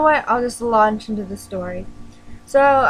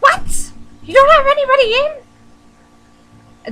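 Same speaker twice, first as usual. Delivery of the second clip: put-on shrill, very high, loud, angry cartoon yell; 14 semitones higher, 6 dB louder than usual. Retelling a lady raging at the speaker in the store, as an angry cartoon lady. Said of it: "if we were in a cartoon, that's what she would sound like".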